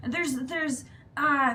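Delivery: loud, high-pitched, urgent pleading tone.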